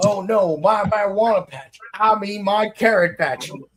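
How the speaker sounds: put-on Southern US accent. Speaker imitating a dubbed character made to sound southern, in a put-on southern accent. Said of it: "they make them sound like they're from the South".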